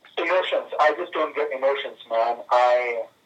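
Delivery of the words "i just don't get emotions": ordinary talk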